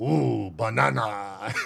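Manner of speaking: very low, rough cartoon ape voice. Explaining what a game character says on finding a banana: Donkey Kong voice. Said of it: "I did it in the stupid game's voice".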